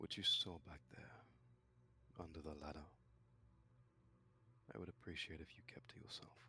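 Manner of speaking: speaking low. A character motions a companion to walk beside him, then speaks in a lowered voice. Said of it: "He'll lower his voice and he'll say".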